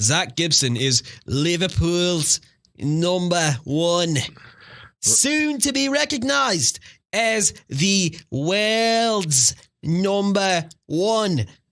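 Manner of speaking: attempted Scouse Liverpool accent, "world's" drawn out. Trying your best accent on air and apologising to listeners in liverpool, attempted liverpool accent. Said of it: "I'm going to try and do my best Liverpool accent here".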